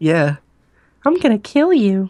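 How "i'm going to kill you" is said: very high, eerie, creepy killer voice. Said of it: "do that voice".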